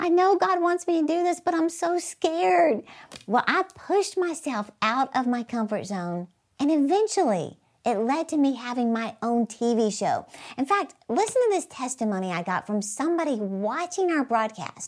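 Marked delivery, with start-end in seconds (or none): 0.0-2.8 mock weeping, high, tearful crying voice. Retelling a phone call to a best friend before a first TV show: retelling own crying. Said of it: "just crying".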